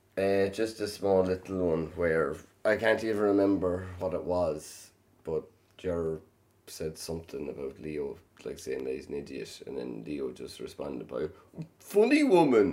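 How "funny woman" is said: poor, very high, loud, squeaky, weird voice. Retelling how Leo answered someone: imitating Leo, not a good impression. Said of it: "That wasn't a good impression".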